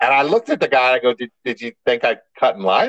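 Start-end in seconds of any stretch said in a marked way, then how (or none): 1.1-2.9 put-on joking, teasing tone, much lower pitch. Retelling how they questioned the counter worker about cutting in line: retelling a joking question. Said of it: "I said it kind of like jokingly".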